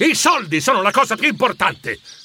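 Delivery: high, fed-up, exasperated bursting-out outburst. A man snaps back at a woman during their argument, exasperated outburst. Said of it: "sbottò lui esasperato".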